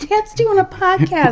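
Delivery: put-on high, slow, giddy, excited girlish voice.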